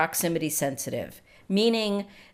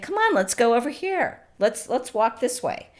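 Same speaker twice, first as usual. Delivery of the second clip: upbeat, coaxing, cheerful talk, pitched higher; 5 semitones higher than usual. Showing how to talk to a dog on a walk, cheerful happy talk. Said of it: "using a higher voice".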